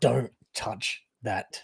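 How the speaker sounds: loud, carrying stage whisper. A player's character backs away and warns the rest of the group in a loud whisper. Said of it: "loud whispering to the rest of the group".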